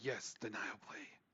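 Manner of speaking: hushed whisper. Voicing a talking sword in the scene: whispering. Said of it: "You hear him whisper".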